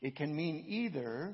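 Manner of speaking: ordinary delivery, nothing marked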